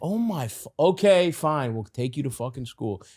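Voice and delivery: put-on, annoyed, irritated, grudging delivery. Acting out a parent reluctantly agreeing to drive: acting annoyed parent. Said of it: "you have a bad attitude".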